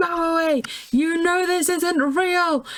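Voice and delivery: fed-up, irritated yell. Describing a movie scene, acting out Velma's line to Shaggy and Scooby, mock-angry Velma shout. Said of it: "gets so angry".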